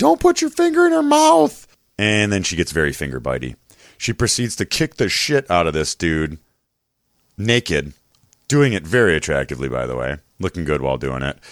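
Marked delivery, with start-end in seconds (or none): 0.0-1.7 very high-pitched, loud scream. Describing a scene on tv, retelling screaming at the tv. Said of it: "I'm like screaming at the TV".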